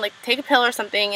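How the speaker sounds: ordinary talk, nothing marked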